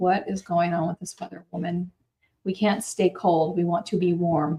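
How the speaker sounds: normal talking voice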